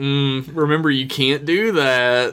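ordinary delivery

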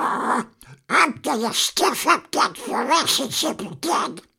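loud shrill squawk. Demonstrating hearing a worrying thought in a silly voice, in Donald Duck voice. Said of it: "in the voice of Groucho Marx, Mickey Mouse, or Donald Duck".

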